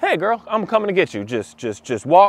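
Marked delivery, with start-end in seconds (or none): 0.0-1.2 super chill, easygoing, lightly pitched-up voice. Showing the right way to approach the dog: super chill. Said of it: "a super chill".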